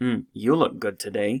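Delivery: skeptical, doubtful, unconvinced tone. Showing how a different tone changes a compliment, skeptical tone. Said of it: "that tone would be taken as a kind of a skeptical tone".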